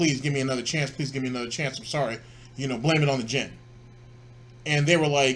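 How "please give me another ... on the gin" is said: ordinary talk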